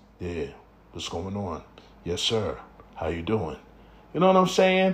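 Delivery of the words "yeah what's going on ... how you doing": very low, deep, soft, unhurried baritone voice. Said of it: "I'm talking about a baritone voice".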